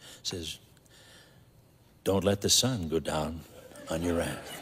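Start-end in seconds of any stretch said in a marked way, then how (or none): 2.0-4.6 very sweet, sugary, soft-spoken voice. Retelling someone standing quietly beside the couch: imitating Jean's very sweet voice. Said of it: "I just hear this very sweet voice".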